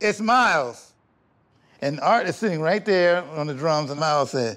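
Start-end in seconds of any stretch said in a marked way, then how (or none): 0.0-0.9 loudly said in mimicked voice. Retelling how someone answered the phone at a rehearsal: imitating someone saying it loudly. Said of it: "says real loud".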